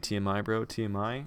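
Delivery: ordinary delivery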